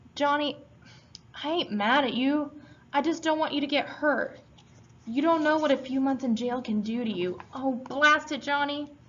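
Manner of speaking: high pleading voice. Dally pleads with Johnny in a tone never heard from him, pleading in a high voice. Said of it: "pleading in a high voice".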